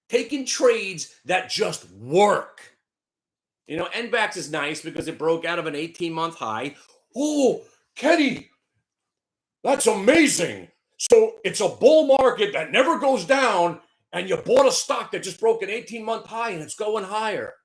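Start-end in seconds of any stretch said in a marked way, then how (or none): 7.1-17.5 put-on sarcastic, self-deriding admiration, high pitch. Speaker mocks himself right after explaining his own stock trade, with mock sarcastic praise. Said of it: "I'm mocking myself".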